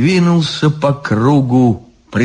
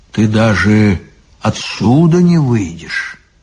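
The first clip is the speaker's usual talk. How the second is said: usual speaking voice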